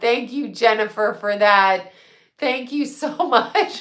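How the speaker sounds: laughter spilling into the words. Speaker thanks Jennifer for what she said, laughing while talking. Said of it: "I'm sorry, I'm laughing".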